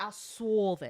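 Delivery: put-on New York accent on "solve". Playing word of the day, saying it with a new york accent. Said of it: "you have to say it with a New York accent".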